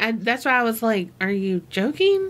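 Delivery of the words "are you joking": normal talking voice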